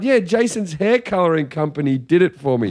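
proud, pleased, small-sounding tone. Retelling how someone answered a compliment on her hair: imitating someone speaking proudly. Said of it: "she sort of looked with a level of pride".

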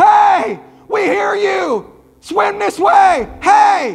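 put-on screaming. Retelling someone calling out to a man in the river: imitating someone screaming. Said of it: "I'm hearing Ricky scream the entire time".

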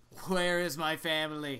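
deep demanding voice. Asked how they would voice a character, answering in a deep, low, demanding Althea voice. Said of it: "Very deep and low and demanding".

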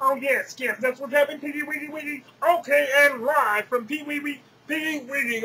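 put-on frog puppet voice. Doing a live weather report as a reporter: Kermit the Frog voice. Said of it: "Kermit the Frog here".

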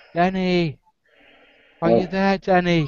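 high, slow, drawn-out call. Voicing a voice calling from along the riverbank, getting louder: Scarlet West's voice calling. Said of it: "it's Scarlet West's voice".

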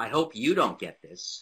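loud, put-on New York accent. Retelling what a woman said to the speaker, new york accent. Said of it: "New York accent says".

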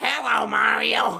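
squeaky character voice. Recalling how a video game character sounded, in a Toad voice. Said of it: "Toad's voice was just like".

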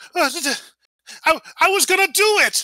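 in shock. Voicing a character interrupted in his big spectacle, shocked. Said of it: "kind of in shock".

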